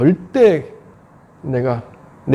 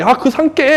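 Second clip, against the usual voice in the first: high, needling, provoking tone. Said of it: "하고 기분 나쁘게 계속 건드는 거죠".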